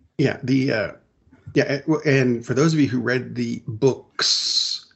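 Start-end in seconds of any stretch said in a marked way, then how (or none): 3.7-4.8 books said slowly with the S stressed. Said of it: "emphasis on the S".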